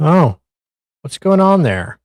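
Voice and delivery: mocking, very loud. Making fun of a dispatcher from a call: mocking imitation of a dispatcher. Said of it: "I will make fun of the dispatcher, though, for being like".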